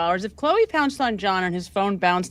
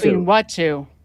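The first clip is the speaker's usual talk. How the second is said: sarcastic mocking repeat, louder; 5 dB louder than usual. Repeating another speaker's question back: sarcastically echoing someone. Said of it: "you're being sarcastic".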